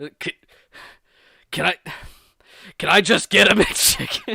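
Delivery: impassioned, passionate pleading with swooping pitch. Act out a man who is still polite while ordering a mcchicken, imitating someone's passionate plea. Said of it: "There was so much like passion there".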